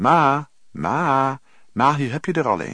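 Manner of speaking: very loud, very slow, drawn-out holler. A man steps back into the hallway and calls up the stairs to his mother, calling out up the stairs. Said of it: "riep onder aan de trap".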